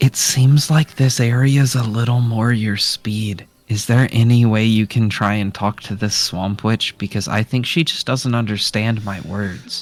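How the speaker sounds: in-character whisper. Leaning in to ask another party member for help: in-character whisper. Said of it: "I'm gonna lean in and whisper".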